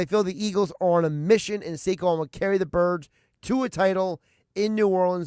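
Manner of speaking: ordinary delivery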